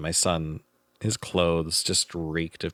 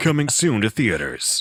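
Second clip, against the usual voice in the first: movie trailer announcer voice, higher and louder; 5 semitones higher, 5 dB louder than usual. Repeating a quote to another speaker as a joke: movie trailer voiceover voice. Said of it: "That sounds like a movie trailer voiceover".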